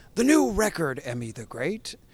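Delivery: swooping put-on radio announcer delivery. An interviewer introduces the guest's new record in an announcer voice. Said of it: "I'll do it in the announcer voice".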